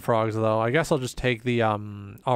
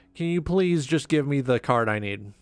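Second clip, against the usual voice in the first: mock polite, playful pleading tone; 3 semitones higher than usual. Begging the game for a needed card: mock polite begging. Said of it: "I'm asking very kindly".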